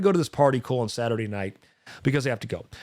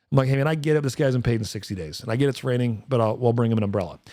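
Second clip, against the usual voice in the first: usual speaking voice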